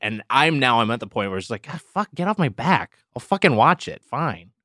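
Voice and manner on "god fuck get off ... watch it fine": put-on annoyed, angry, fed-up outburst. Retelling own reaction to people pushing a show: imitating angry self. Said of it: "Why are you so angry?".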